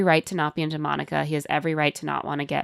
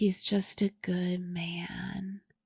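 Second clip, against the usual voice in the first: very slow, sleepy, dragged-out drawl; 2 semitones higher, 10 dB quieter than usual. Retelling a bride getting her makeup done, imitating Virginia's sleepy talk. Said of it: "in full Virginia sleepy talk mode".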